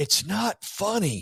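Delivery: sudden, abrupt, high-pitched yell cutting through laughter. Retelling how a man stopped laughing people cold, retelling a yell. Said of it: "he literally stops and yells".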